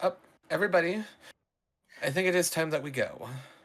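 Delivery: loud, high, rousing holler. She turns to the others still asleep, shouting to wake everyone. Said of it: "she starts like clapping her hands and shouting at you".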